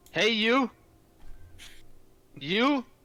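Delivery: shouting in character. Acting out a character's call to the warden: in-character yelling. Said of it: "yelling, yelling at the".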